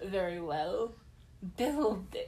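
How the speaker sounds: dark, low menacing voice. Recapping an episode, acting out Gobir's reply in a mock-sinister Gobir voice. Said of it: "his tone is really sinister".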